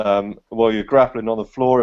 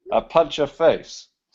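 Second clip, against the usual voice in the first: put-on Belarusian accent, higher pitch; 4 semitones higher than usual. Joking in place of an absent fighter: Belarusian accent. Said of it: "I'll try my Belarusian accent".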